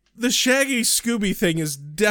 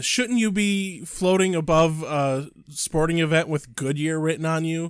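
ordinary talk

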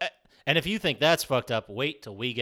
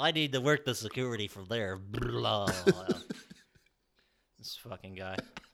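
dead-on cartoonish game character voice; 3 semitones lower, 5 dB quieter than usual. Commenting on a helicopter scene, voicing a character: Bentley voice from Sly Cooper. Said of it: "your perfect Bentley voice from Sly Cooper".

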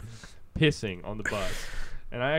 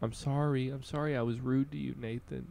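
mock drunk blubbering, higher; 2 semitones higher, 4 dB quieter than usual. Retelling to a friend what he said when picked up drunk, imitating drunk blubbering. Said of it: "you're drunk and blubbering".

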